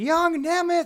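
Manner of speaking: shrill, very high-pitched screaming call. Retelling how the show booker yelled a nickname: imitating Jim Cornette's high-pitched scream. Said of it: "You're just screaming".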